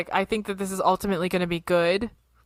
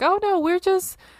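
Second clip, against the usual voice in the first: high-pitched, mock-innocent, mocking tone. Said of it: "they justify themselves being like".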